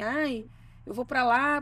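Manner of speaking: normal talking voice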